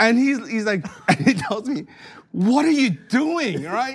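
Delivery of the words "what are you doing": startled, shocked, pitched-up exclamation. Retelling what a total stranger said when he turned around: acting out a shocked stranger. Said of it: "like all shocked".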